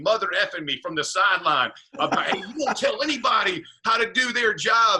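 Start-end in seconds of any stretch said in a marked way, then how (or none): 2.3-5.0 high, screamed, yelled tirade. Retelling how a man screamed at him from the sideline, retelling someone screaming. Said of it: "Mud comes screaming at me".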